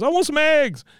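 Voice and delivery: very high, very loud, shrill distraught wail. Retelling a scene where Peggy refuses a bottle: imitating Peggy distraught. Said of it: "she's distraught at this point".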